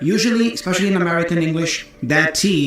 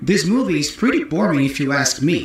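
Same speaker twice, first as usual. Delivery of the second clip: usual speaking voice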